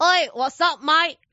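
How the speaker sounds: high, deliberate put-on Australian accent. Speaker and Els each put on an accent, greeting: put-on Australian accent. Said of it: "如果我同Els 一人扮一個澳洲口音".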